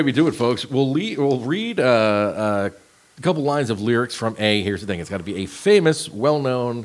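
ordinary delivery, nothing marked

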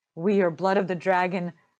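ordinary delivery

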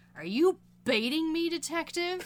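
contemptuous, condescending tone. Recounting a great moment where Linda calls out the detective, mock-disdainful Linda impression. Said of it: "just straight looks at him with disdain in her voice".

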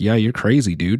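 ordinary talk

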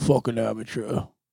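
soft, deep-throated mumble, syllables swallowed, unenunciated. Doing a bit where you don't enunciate: deep mumbled voice. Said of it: "I'm trying to get deep down in there. Can you hear how deep I'm getting?".

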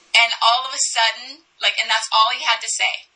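ordinary talk, nothing marked

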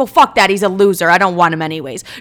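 mock pissed-off tone. Retelling own reply to a psychic: retelling an angry reply. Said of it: "I get pissed".

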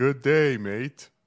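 put-on accent that sounds Canadian. Greeting an Australian person on the call: accent that sounds Canadian. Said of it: "Sounded very Canadian".

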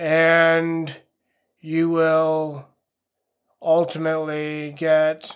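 super slow, dragged-out, boring delivery. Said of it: "I'm talking super slow in my episodes".

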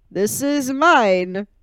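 slow, loud, bad Russian accent. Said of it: "I can't do a Russian accent".

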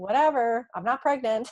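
dismissive, sassy, snarky delivery. Retelling her reply to a coworker's question: imitating her own sassy reply. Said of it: "me being sassy and snarky".

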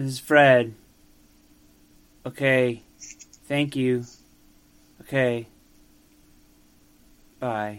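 sorrowful tone. Voicing a traveling cranberry salesman leaving a phone message: sad voice. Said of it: "Fred Marple sounds sad".

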